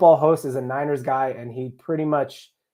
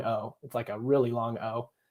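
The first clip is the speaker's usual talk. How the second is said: usual speaking voice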